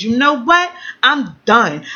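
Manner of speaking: put-on flipped-out, furious, fed-up delivery. Retelling an argument with her man on the phone: imitating own furious outburst. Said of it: "I flipped the fuck out".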